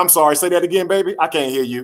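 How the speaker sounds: teasing, sarcastic voice. Retelling what mom said during a whipping: imitating mom's sarcastic tone. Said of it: "she's sarcastic, bro".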